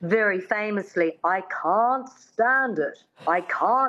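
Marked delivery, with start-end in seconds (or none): 1.3-3.9 put-on slow, careful mid-Atlantic accent. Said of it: "her dialect coach says".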